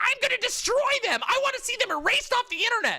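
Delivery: acted-out, very high, shrill, loud screeching tirade. Retelling how a streamer reacts when a debate goes sour: imitating Mike from PA screeching. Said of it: "screeches at the top of his lungs and then says".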